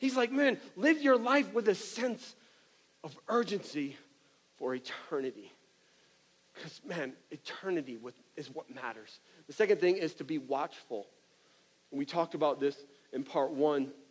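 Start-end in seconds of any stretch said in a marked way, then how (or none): 0.3-5.5 pleading, halting, pausing inside each phrase. Acting out Jesus urging people in his last sermon: imitating Jesus pleading.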